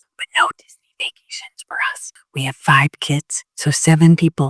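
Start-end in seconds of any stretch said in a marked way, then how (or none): 0.2-2.1 hushed whisper under the breath. Answering how people afford Disney vacations, whispering because of her husband. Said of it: "I have to whisper because my husband".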